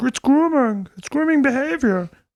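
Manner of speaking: very high, put-on Canadian puppet-like voice. Sliding into another pundit's voice: Jordan Peterson voice. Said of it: "a little Jordan Peterson".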